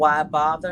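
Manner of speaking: ordinary talk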